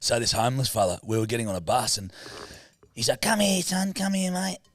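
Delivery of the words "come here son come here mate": very high-pitched calling voice. Retelling a bus encounter, imitating the homeless man's speech. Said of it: "That's how he spoke".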